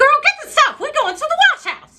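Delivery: very high-pitched, fast shrieking voice. Retelling what her mom said when the washer broke, imitating mom's shrieking voice. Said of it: "She has this high pitched, shrieking voice".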